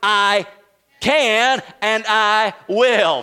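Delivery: slow, deliberate, loud, emphatic voice.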